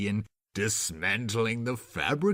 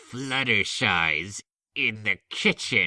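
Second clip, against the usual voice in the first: snarling, growling through clenched teeth. Reading a story, a character just hit with a pie answers: growled through gritted teeth. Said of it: "she growled".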